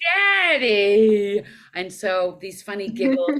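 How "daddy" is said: daddy belted very loud and stretched long. Showing how the audition line was first voiced: Pearl voice, low with Valley Girl upswing. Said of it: "that's how I came up with Pearl".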